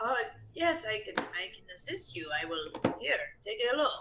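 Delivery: hoarse, scratchy, raspy voice. Voicing a woman asked if someone may look in her bag, raspy voice. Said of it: "I imagine her voice is very raspy".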